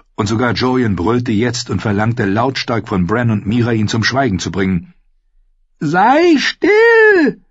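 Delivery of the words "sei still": very high, shrill, frightened, swooping, drawn-out cry. Bran, amid thunder and lightning, cries out in a shrill, frightened voice. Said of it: "sagte Bran mit schriller, verängstigter Stimme".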